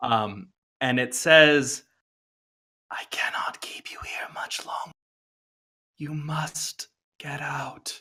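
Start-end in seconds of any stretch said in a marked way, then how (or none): 2.9-8.0 very hushed whisper echoing as in a cave. Narrating to the players, voicing a voice they hear in a cave: echoing whisper. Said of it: "it's sort of a whisper that like echoes through this cave".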